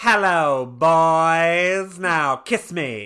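put-on Mid-Atlantic style accent. Imitating a show character after she gets poison-ivied, in a Mid-Atlantic accent.

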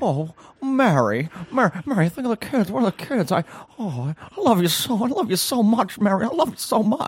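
put-on very high, slow, drawn-out old Hollywood movie-star voice. Doing an impression on request from the other speaker: Jimmy Stewart impression. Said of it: "I'll start with Jimmy Stewart".

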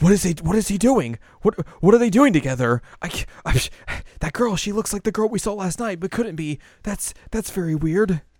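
high, loud freaking out.

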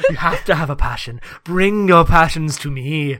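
weird put-on European accent. Speaker redoes a passionate-teacher bit in a weird European accent. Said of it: "weird European accent".

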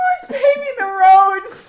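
high, loud, laugh-cracked squeak through laughter.

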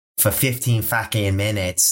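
exaggerated, heavy Boston gangster accent. Imagining an actor overdoing the local accent in a gangster role: exaggerated boston accent. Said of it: "imagine playing Whitey Bulger".

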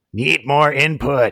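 bad robot voice, high and loud. Giving something a potential pass, the speaker quotes the robot: bad Johnny Five impression. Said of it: "I think that's a terrible impression".

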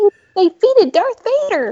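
put-on high, wide, awed child voice.

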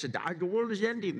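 cartoon sloth character voice. Describing the sloth character from Ice Age to an audience, in an Ice Age sloth voice. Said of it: "this guy that talks like this".

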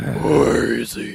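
hammy, overly dramatic hero voice, very loud, creaky rasp. Handing out candy in costume, the speaker does the overly dramatic Batman voice. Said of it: "talk in the overly dramatic Batman voice".

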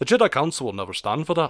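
put-on slight Scottish brogue. Praising a film accent, speaker quotes Qui-Gon in a slight Scottish brogue. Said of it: "little definition of just, like, Scottish brogue".

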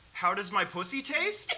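voice lifts in questioning rise on taste. Showing how a line reads with a question mark: read as a question. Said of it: "Sex with a question mark. This is how I read it".

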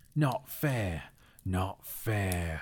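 hissed monster-like voice. Reading the story aloud, the narrator gives Gollum's upset reply to Bilbo, Gollum hissing. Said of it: "he hissed".

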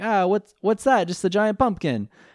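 put-on high, half-done, loose Italian accent. Retelling a card duel, speaking as Joey: Joey voice, almost Italian accent. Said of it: "that was, like, almost Italian, and I'm really sorry".

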